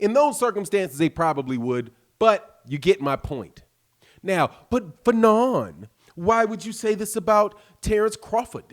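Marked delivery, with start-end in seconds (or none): 4.7-8.6 fake British accent, pitched up. Voicing a question put to the speaker, in a put-on British accent. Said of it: "I shouldn't be doing a British accent".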